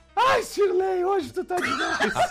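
put-on high cries. Retelling the noise heard from the mother, imitating her crying out. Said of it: "A mãe gritando".

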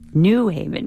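strong, hard stress on NEW in New Haven.

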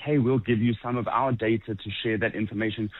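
normal talking voice

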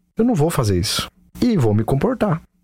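ordinary delivery

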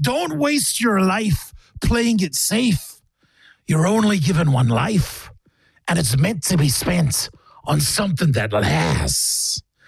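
accent wandering from American into Jamaican. Redoing a scripture line in an accent, accent drifting american to jamaican. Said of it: "or was that Jamaican at the end there".

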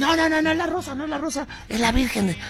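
high, hurried, flustered voice.

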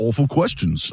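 awful put-on British accent. Quote Thierry Henry, unhappy with the interviewer, in an awful British accent. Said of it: "that was an awful British accent".

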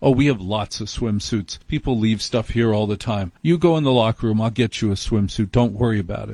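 ordinary delivery

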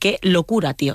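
ordinary talk

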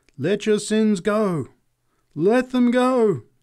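very high, drawn-out crying out. Narrator reads the swaying woman on the box, crying out. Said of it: "she cried".

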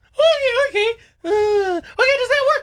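weak, whiny, high whimpering zombie voice. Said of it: "It does not work. I need some girth in that voice".

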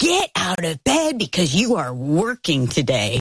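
angry heated outburst with swooping pitch. Retelling ordering a son out of bed: retelling an angry outburst. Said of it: "I was not calm or cool".

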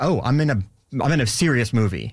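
plain

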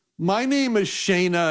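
put-on slow, high-pitched voice of a nine-year-old girl. Retelling answering the phone to a young girl, imitating Shayna's high voice. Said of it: "in this high-pitched 9-year-old voice".

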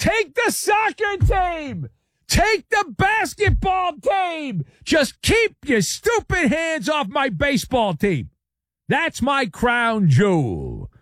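high, slow, desperate scream at top of lungs. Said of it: "he's screaming at the top of his lungs".

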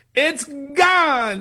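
high, excited, announcer-like calling voice.

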